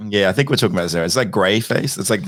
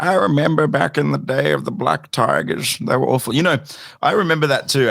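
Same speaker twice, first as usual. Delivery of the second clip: put-on old man voice, pitched up; 7 semitones higher than usual. Announcing a voice switch for a short reminiscing bit: old man voice. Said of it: "old man voice".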